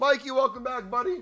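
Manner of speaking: voice breaking very high-pitched and loud. Welcoming a returning buddy back into the conversation, voice cracking. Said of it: "You didn't hear my voice crack".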